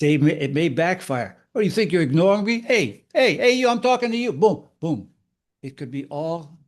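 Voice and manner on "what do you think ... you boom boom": put-on Italian tough-guy voice, much higher. Speaker shows how someone who is being gray-rocked might react, in a bad-guy italian accent. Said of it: "always makes a bad guy Italian".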